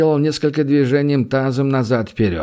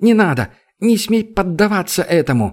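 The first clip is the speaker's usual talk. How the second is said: high, frightened cry; 6 semitones higher than usual. A woman stopping her companion from shoving a man, crying out in fright. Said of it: "испуганно вскрикнула Тера".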